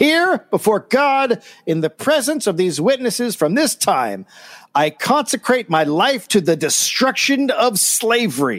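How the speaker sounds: high-pitched, ringing, solemn declaring tone. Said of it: "and declared".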